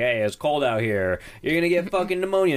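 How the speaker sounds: annoyed, grumpy, pissed-off outburst, high and rising. Retelling a movie scene where the dad scolds his daughter: imitating an angry dad. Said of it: "he's all pissed off because he's like".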